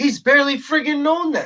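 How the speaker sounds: friggin' stressed high with exasperation. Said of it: "He's barely known them".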